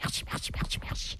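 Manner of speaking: hushed, soft, whispered murmur. A woman saying thanks in one voice after another, this time whispered. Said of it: "et puis elle chuchotait".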